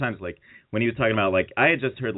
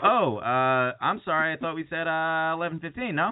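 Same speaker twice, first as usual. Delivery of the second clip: unsure, uncertain tone, slightly higher pitch; 6 semitones higher than usual. Retelling what a podcast host said about an interview: Marc Maron impression. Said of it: "And Maron's like".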